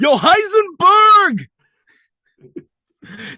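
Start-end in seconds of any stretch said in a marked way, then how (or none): 0.0-1.5 very high, loud, slow bad impression yell. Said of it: "That's so bad".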